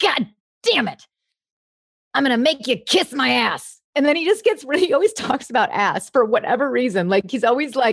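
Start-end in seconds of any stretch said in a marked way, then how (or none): 0.0-3.8 rough sea captain voice. Describing impressions of men from reality shows: gritty Captain Lee impression. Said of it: "it's real gritty, but he'll be like".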